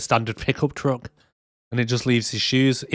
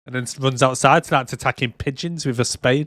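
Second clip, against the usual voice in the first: ordinary talk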